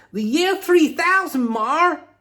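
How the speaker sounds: very high, very loud put-on American accent. Voicing an imagined viewer's answer to a question: American accent. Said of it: "In an American accent".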